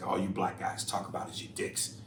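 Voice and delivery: ordinary talk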